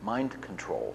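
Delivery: dry, deadpan, matter-of-fact delivery. Speaker retells a Soviet immigrant's reply about his ELF work: retelling a deadpan answer. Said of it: "Just deadpan face".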